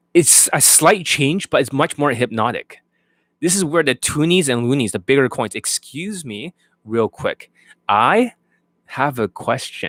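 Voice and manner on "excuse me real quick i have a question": slow, deliberate, leaning hard on key words. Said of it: "some words can be emphasized more".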